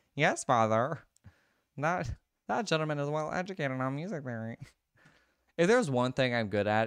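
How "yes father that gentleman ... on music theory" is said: put-on nerdy, annoying, know-it-all voice. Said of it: "it's a very annoying nerd voice".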